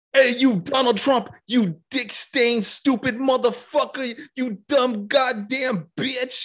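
put-on, very high, drawn-out screaming rant. Imitating Michael Rappaport screaming into his phone at Donald Trump. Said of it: "just screaming into his cell phone".

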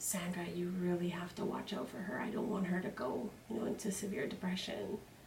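soft, hushed, confiding whisper. Retelling what an aunt said to the mother: imitating someone whispering. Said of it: "I hear her whispering to my mom".

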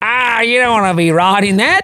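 put-on Australian accent, very high pitch. Impersonating a man who pulls up to surfers in a speedboat, Australian accent. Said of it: "it doesn't have to be an Australian".

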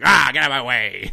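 cartoon video-game character voice. Imagining what Waluigi would say in a game: Waluigi voice. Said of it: "He'd be like".

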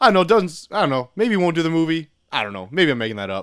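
dismissive, offhand, noncommittal brushing-off tone. Retelling what a brother said on sports radio, imitating a dismissive tone. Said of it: "That's how he says it".

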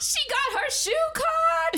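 shrill, very high, loud yell. Retelling what a random man walking behind her yelled out: retelling a man's yell. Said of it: "he yells".

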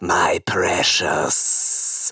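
throaty, guttural, snakelike creature voice. Retelling the voice their dad used to do for them, guttural snakelike Gollum voice. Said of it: "very sort of like guttural snake thing".

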